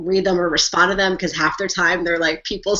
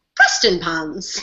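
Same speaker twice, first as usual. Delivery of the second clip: put-on Scottish or British accent. Trying a place name as suggested on Twitter, in a British or Scottish accent. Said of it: "say Preston Pans in a British or Scottish accent".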